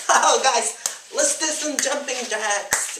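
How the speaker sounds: very high, loud, put-on girly voice. Caricaturing girly cardio workouts, in a put-on girly voice. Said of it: "I have no idea why I just did that voice".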